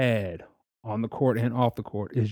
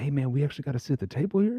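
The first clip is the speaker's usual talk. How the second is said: put-on whisper, much higher pitch; 3 semitones higher than usual. Retelling whispering to a friend at his parents' table, retelling a whisper. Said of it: "I'm like whispering to him".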